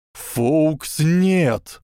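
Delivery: desperate high shout with нет drawn out. An old wizard cries out to the phoenix: shouted. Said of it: "крикнул старый волшебник".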